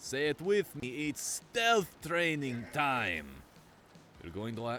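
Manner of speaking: put-on German accent sliding into Russian accent. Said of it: "I'm getting my Russian and German accents mixed up".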